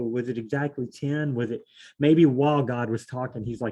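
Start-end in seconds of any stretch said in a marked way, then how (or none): none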